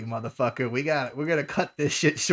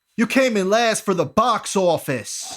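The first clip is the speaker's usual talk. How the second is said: loud, pitched-up, belted-out voice; 5 semitones higher, 6 dB louder than usual. Speaker retells doing a voice aimed at John Cena: The Rock impression. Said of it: "I did my Rock voice".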